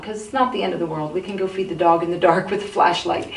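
ordinary talk, nothing marked

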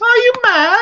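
put-on shrill, very high, loud little girl voice. Recounting a scene, speaking as her little girl in a little girl's voice. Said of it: "it is her little girl's voice".

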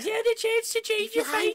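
put-on feminine-sounding Scottish accent. Reading a character's line aloud after being asked: feminine Scottish accent. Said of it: "give him a feminine Scottish accent".

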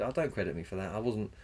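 plain

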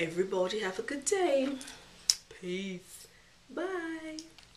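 prettied-up, sweet, beautiful voice with drawn-out bye. Signing off a video to viewers: put-on beautiful voice. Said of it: "like I said in the beautiful voice".

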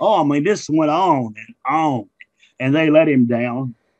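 ordinary talk

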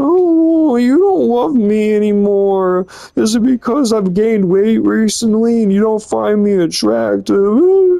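crying, sobbing, with high, tearful, drawn-out "oh". Retelling an argument, quoting her after she starts crying: imitating someone crying. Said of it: "just crying, like".

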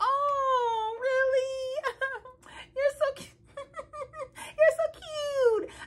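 imitated laugh. Retelling a woman's reply when a man said he was falling for her, imitating her laugh. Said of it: "You know her laugh".

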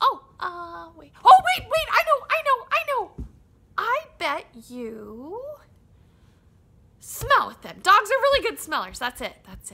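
high, loud, swooping squeak. Reading a story where Timothy Mouse keeps guessing at Scout's answers; Timothy Mouse voice. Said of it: "Timothy Mouse was sitting in the middle of his farmhouse".

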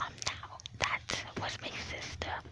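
soft unvoiced whisper.

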